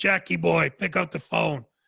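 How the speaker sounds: put-on, imitated raspy voice. Recalling a man who called him on the walkie-talkie, imitating a raspy voice. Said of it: "He talked very raspy".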